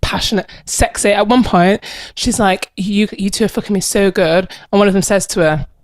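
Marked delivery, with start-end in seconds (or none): none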